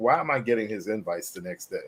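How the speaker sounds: ordinary talk, nothing marked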